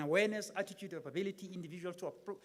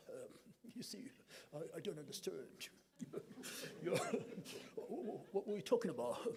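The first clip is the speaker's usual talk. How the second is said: put-on voice, whispered, soft, breathy and hushed; 7 dB quieter than usual. Mocking people who want to speak like Prince Charles: mock Prince Charles voice. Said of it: "we want to speak like Prince Charles".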